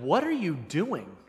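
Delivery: disdain dripping off the words. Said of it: "that kind of disdain in her voice".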